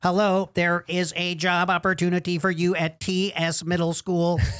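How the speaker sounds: robotic, computerized automated recorded-message voice. Recalling the nightly automated call offering substitute teaching jobs, computerized phone voice. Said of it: "It would be like this computerized voice".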